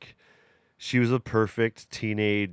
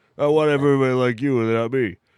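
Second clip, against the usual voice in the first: loud, booming, belted-out voice; 4 semitones higher, 7 dB louder than usual. Imitating Brad Garrett's character on Everybody Loves Raymond: Brad Garrett deep voice. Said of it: "He's got that deep voice".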